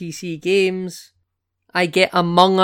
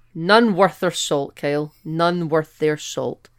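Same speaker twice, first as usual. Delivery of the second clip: normal talking voice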